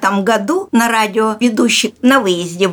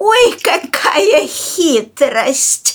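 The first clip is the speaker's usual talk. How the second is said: put-on high-pitched storybook fox character voice; 7 semitones higher than usual. Describing how she switched voices for each animal character, she does the fox voice. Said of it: "Если лиса, меняла на лису".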